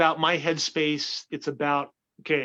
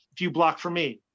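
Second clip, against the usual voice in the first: put-on flat, deadpan delivery. Retelling his reply to someone who asked him to block, deadpan.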